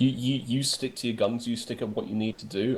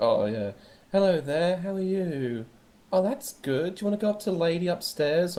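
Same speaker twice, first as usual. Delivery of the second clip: mock, sugary, high, patronizing talk-to-a-child voice; 7 semitones higher than usual. Retelling how people greet him, imitating talking to him like a child. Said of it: "people talk to me like I'm a child".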